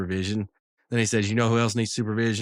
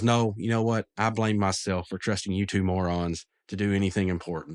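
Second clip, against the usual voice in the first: ordinary delivery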